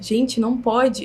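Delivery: whispering. Retelling talking quietly to a phone camera while filming: retelling own whisper. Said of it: "Eu falando baixinho pra minha câmera".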